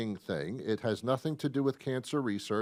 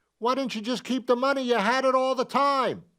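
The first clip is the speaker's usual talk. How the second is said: very high, shrill, loud shouting; 11 semitones higher, 5 dB louder than usual. Speaker addressing an audience, shouting so they can hear. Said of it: "Sorry for shouting".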